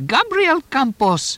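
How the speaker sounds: put-on shrill, very high old crone's shriek. Narrator reads the crone calling to the gray-haired man, shrieking high crone voice. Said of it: "shrieked in her highest crone's voice".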